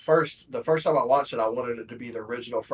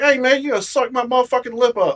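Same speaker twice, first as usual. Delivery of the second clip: shrill, very loud, high-pitched shouted yell; 12 semitones higher, 8 dB louder than usual. Retelling a favorite movie scene: imitating a movie character. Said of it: "He's like".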